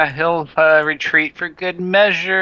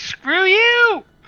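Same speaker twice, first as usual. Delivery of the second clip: put-on character voice yell, much higher. Voicing Archie, damaged for the first time in days, yelling in a little hobbit voice. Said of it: "he's gonna yell out his little hobbit voice".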